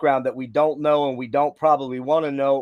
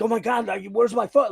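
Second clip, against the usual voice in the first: high, panicked freak-out; 9 semitones higher than usual. Retelling losing a phone after a show: retelling own panic. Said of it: "And I was freaking".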